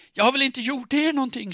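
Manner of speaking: very high, very loud panicked, terrified scream. Narrator voicing a terrified character facing a knife attack, screaming in terror. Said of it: "skrek hon".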